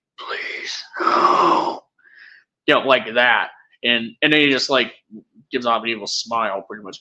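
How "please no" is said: eerie, menacing, creepy hushed whisper. Recapping a scene where Dracula chases a man: imitating Dracula's creepy whisper. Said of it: "just really creepily, just whispers at him".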